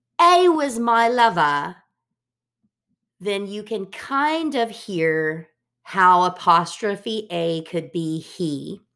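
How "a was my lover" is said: British accent, English pronunciation, pitched up. Saying a Hamlet line aloud to show how A sounds, British accent. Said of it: "if we think about it with a British accent".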